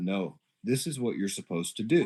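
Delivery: acted grave, earnest, dead serious insistence. Retelling a stranger's insistence after he handed over money: imitating a dead serious stranger. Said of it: "he looked at me dead serious".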